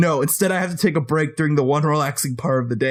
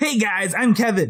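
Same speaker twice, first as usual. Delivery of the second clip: pitched-up voice of a buddy; 6 semitones higher than usual. Showing the others how an impression sounds: Kevin impression. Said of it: "If I'm doing a Kevin impression".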